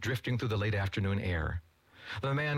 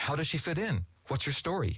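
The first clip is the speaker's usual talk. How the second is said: eager, higher pitch; 5 semitones higher than usual. Wade questions Jeffrey about the woman he found, eager. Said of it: "leaning forward eagerly".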